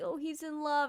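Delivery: put-on happy crying. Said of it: "happy crying".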